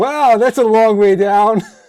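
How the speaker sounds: shrill, booming yell, very loud and very high. Playing a character looking down a deep hole: yelling in character. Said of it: "yell out loud".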